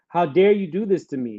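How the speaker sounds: ordinary talk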